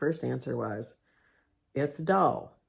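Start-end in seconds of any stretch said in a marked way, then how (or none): 1.7-2.4 mock sarcastic, dry and dismissive tone. Retelling own first answer to a question: mock sarcastic tone. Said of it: "I'm being sarcastic".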